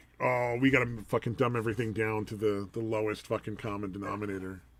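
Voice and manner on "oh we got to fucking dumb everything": ordinary delivery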